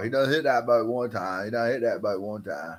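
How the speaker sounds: put-on South Carolina accent. Joking about how a guy in a video talks, put-on South Carolina accent. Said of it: "That's how y'all South Carolina boys talk".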